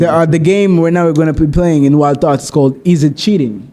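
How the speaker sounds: ordinary delivery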